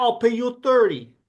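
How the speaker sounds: imitated French Canadian accent. Imitating what people there might say: put-on French Canadian accent. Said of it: "you're doing the, uh, French Canadian".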